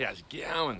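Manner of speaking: homemade, put-on Australian accent. Speaker tries out an aussie accent impression. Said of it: "That's my Aussie accent, my impersonation of an Aussie accent".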